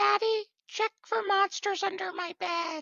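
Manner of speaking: put-on very high, tiny child's voice, whispered. Telling a short story, the speaker voices the son being tucked into bed, little kid voice. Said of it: "give me your best little kid voice".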